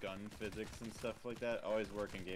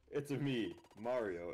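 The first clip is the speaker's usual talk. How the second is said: totally flat, dead-voiced, very slow, drawn-out delivery; 3 semitones higher, 4 dB louder than usual. Mocking a movie casting while gaming: dead-voiced Chris Pratt Mario. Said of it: "in the most dead voice ever, Chris Pratt".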